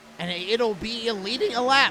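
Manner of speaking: big crack in the voice midway. A race commentator calls a driver leading a lap, voice cracking. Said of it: "big voice crack".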